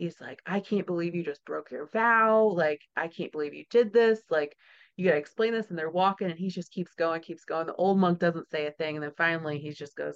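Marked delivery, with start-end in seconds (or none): 0.5-5.7 put-on livid, furious outburst. Retelling a story, voicing the young monk scolding the old monk: imitating a livid outburst. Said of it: "the young monk is just, like, livid".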